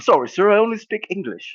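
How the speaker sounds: clumsy Liverpool (Scouse) accent, very high pitched. Joking about only speaking english in england, the speaker tries a bad liverpool accent. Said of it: "I'm so bad at the English accent".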